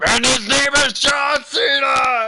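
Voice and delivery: shouting very loudly. Announcing a wrestler's name in a pick, shouting very loudly. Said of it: "you're gonna blow the microphone out".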